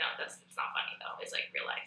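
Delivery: soft, unvoiced whisper.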